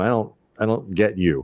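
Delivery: ordinary talk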